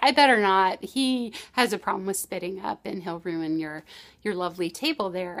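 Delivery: ordinary delivery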